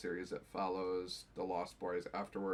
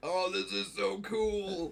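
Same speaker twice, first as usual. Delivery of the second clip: put-on very high, very slow young teen boy voice; 12 semitones higher, 6 dB louder than usual. Retelling own reaction while reading a comic: imitating a fourteen-year-old boy. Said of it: "I'm reading it like a fourteen-year-old boy".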